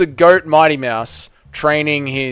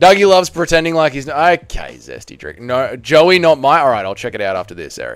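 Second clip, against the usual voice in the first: normal talking voice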